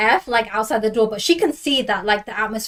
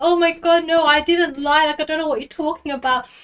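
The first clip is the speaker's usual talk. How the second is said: acted, tearful, weepy, high-pitched crying voice; 6 semitones higher than usual. Acting out how a man acted like an actor in front of her, imitating someone crying. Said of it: "he's like crying, like streaming tears".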